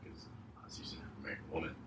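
hushed, fast, low whisper.

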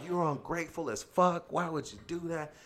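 high-pitched, enraged screaming. Retelling a heated phone call, imitating someone screaming. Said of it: "he starts screaming down in his neck".

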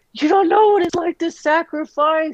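mock very high, tearful, crying wail. Retelling a drunken phone call to a friend: retelling own crying. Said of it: "and I was crying, like".

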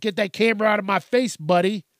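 put-on defensive snapping. Recounting how people reacted to being filmed, imitating a defensive snap. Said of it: "they started getting defensive".

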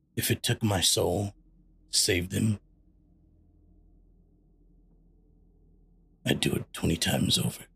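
grave, very serious, stern no-arguments dad voice. Player voices his father character addressing everyone, very serious dad tone. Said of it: "very seriously and very, like, very, like, dad".

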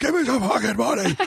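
very high, angry, acted screech. Retelling how a shirtless man on a bench screamed at passing families: imitating a man screaming. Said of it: "he would scream at them".

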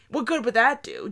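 dry, mock sarcastic tone. Retelling his reply to a gymnast's family member, retelling a sarcastic reply. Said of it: "I kind of sarcastically responded".

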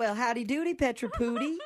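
very high, gentle, goofy put-on voice. Prank calling a parent about her son's reading: gentler, sillier put-on voice. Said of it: "take a gentler and sillier approach".

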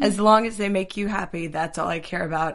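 tearing up, tearful, on the verge of crying. Recalling a mother's words seen on screen, tearing up. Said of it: "I'm tearing up right now".

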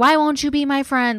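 high-pitched, tearful crying, losing it completely. Retelling how a woman broke down at another girl, imitating Bernadette crying. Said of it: "just like loses it".

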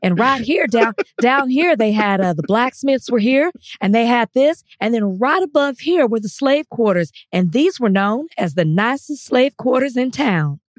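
put-on Southern American accent with tour-guide patter. Retelling what a woman said to the group on a trip, in her southern accent. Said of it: "In her Southern accent".

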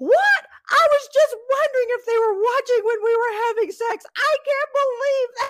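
very high, loud, shrill screaming rant. Retelling how he reacted to a message from his grandparents: imitating someone screaming. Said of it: "he starts screaming".

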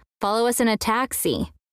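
ordinary delivery

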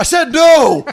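sudden, very high, loud, furious yell, acted out. Quoting a professor from a favorite movie refusing a request, imitating an angry yell. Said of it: "And he just like yells at her".

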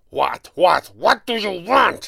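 angry, roaring bellow. A boxing trainer snatches up the late-night ringing phone, angry bellow. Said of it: "He bellowed".

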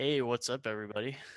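relaxed and easy. The podcast host greets everyone when introduced: calm voice. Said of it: "He's got that nice calm voice that you need for the host".

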